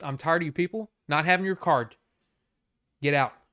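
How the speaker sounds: loud, angry, all-out yell. Retelling throwing back a customer's license: imitating himself angry. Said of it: "All mad".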